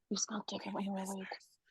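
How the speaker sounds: ghostly whisper. Pretending to be ghosts making creepy noises, in a ghostly whisper. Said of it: "Little whispers".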